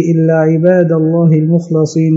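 plain

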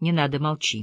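plain

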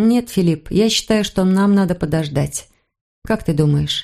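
ordinary delivery

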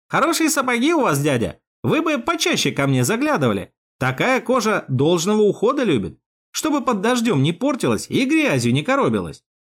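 loud, projected speech. A young shoeshiner, after a whisper, speaks up to his customer; saying it loudly aloud. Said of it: "а вслух громко выдал".

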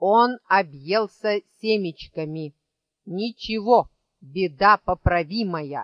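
ordinary delivery

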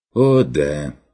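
biting, sneering, mocking sarcastic tone. Reading fiction, a character answers a remark about another's exploits: sneering sarcastically. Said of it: "язвительно усмехнулся фон Лауфенберг".

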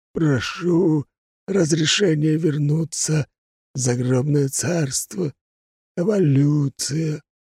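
eerie, high, creepy undead skeleton voice. Narrator voicing the skeleton in a story, in a creepy skeleton voice. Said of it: "произнес он своим жутким голосом".

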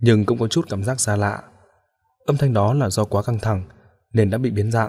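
ordinary delivery

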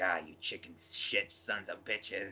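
low, dropped film-actor voice. Acting out a man who stumbles off after being shot in the leg, an impression a little like Willem Dafoe. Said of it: "That was the best impression I've ever heard".

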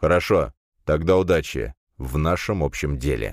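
ordinary delivery

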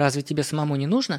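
ordinary delivery

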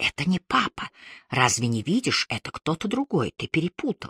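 whispered. During a game, a mother speaks to her little son: whispering. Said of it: "Евстахия шепотом говорила".

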